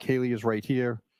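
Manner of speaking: ordinary delivery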